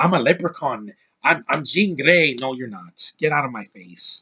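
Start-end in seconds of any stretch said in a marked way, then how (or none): 0.0-2.3 put-on cartoon leprechaun Irish accent. Mocking an actor's accent in X-Men, do a mock Irish-accented Sophie Turner. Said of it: "Sophie Turner sounding like that".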